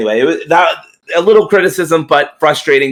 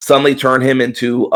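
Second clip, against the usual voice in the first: usual speaking voice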